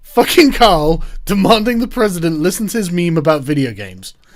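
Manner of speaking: words breaking up with fits of laughing. Reading a line aloud, unable to keep a straight face: laughing while reading aloud. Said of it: "I can't get this sentence out".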